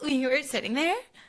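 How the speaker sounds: high, mock flustered, alarmed, panicked voice. Retelling a girl finding someone in her reserved chair: imitating someone in a panic. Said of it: "in a panic".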